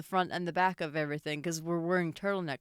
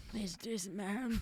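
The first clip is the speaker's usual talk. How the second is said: put-on elderly woman voice, quieter; 3 semitones higher, 9 dB quieter than usual. Quoting a character's line about her uncle: old lady voice. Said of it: "You sound like an old lady".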